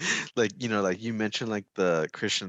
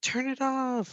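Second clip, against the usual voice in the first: put-on very high, scared, frightened shriek. Retelling being scared of a movie as a kid: imitating own past screaming. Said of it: "screaming every time he".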